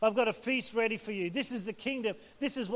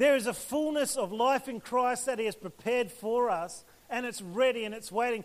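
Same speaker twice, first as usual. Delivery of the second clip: ordinary talk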